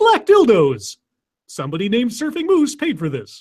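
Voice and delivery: high, swooping, sing-song cartoon moose voice. Reading a requested ad for viewers in Bullwinkle's voice. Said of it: "in Bullwinkle's voice".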